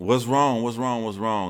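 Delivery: high, loud pissed-off voice. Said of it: "And she was pissed".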